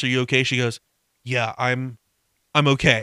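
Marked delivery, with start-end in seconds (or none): 1.2-3.0 put-on unenthusiastic tone, lower and slower. Retelling a woman's answer when her partner asks if she is okay; mock-unenthusiastic reply. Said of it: "All the enthusiasm of like".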